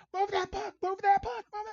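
very high-pitched, shrill hollering scream. Retelling hearing someone yell at the rink, Jack's high-pitched put-on screaming. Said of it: "he's screaming in that high-pitched voice".

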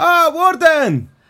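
very high-pitched, loud hollering. A character clambers down and greets the Warden, with a loud shouted greeting. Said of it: "Oh my God, shut up".

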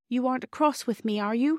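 very small, tiny, timid little voice. Bobby speaks up to the silent doctor, very small voice. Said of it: "said Bobby in a very small voice".

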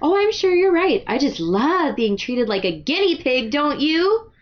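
high, sassy retort tone. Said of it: "this is her sass".

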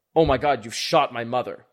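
horrified character voice. Game master voicing Bertrand, reacting to players calling snack tokens worthless: aghast. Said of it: "has looks aghast when you say".

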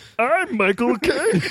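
pitched way up high. Retelling someone asked to do a Michael Caine impression: Michael Caine impression. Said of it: "do you wanna hear my Michael Caine impression?".

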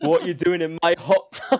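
put-on loud, high-pitched bellow in a Scottish accent. Retelling what the neighbour shouted at them: Shrek voice. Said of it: "much like Shrek saying".

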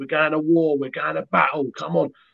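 fired-up, animated, put-on rallying call. Retelling rallying the boys from the sideline, retelling a sideline shout. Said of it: "I'm shouting to the boys".

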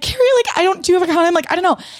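very high, panicked, rushed, frantic tumbling speech. Retelling a phone call to a friend: imitating a frantic plea. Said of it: "in a fucking frantic state".

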